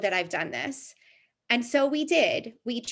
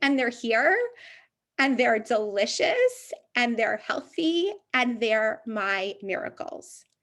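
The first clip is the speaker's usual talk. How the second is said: tearful voice, choking up, catching on tears. Talking about their seven-year-old twins after losing other pregnancies, choking up. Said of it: "And now I'm going to cry".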